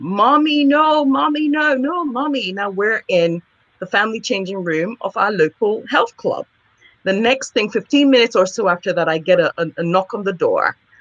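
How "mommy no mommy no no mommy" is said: mock small child screaming, high and shrieking. A parent retelling washing her daughter's hair, imitating a screaming child. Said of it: "and she's screaming".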